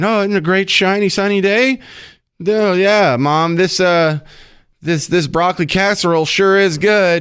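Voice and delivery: high mocking send-up. Mocking what she is saying now: mocking imitation of her. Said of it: "Now you're saying".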